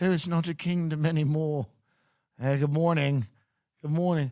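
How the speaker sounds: put-on British accent on every word. Imagining your child walking around talking with a British accent. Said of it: "walking around with a British accent being like".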